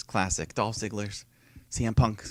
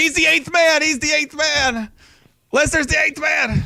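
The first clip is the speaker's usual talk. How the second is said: mock excited commentator yell, very high and loud; 6 dB louder than usual. Recapping the end of a wrestling match, retelling a commentator's shout. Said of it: "Corey's just shouting".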